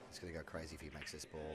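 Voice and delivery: very quiet, hushed half-whisper. Commenting on a tense shot in a quiet room: half-whispering. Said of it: "I'm whispering at the moment".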